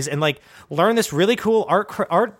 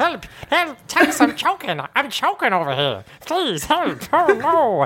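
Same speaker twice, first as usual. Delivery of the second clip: put-on talking puppet voice, pitched higher; 6 semitones higher than usual. Voicing a choking talking puppet: Danny DeVito voice. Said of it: "he's like Danny DeVito".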